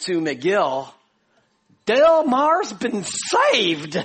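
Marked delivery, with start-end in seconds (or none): 1.9-4.0 high, loud, slow, amazed delivery. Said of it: "he declares with amazement".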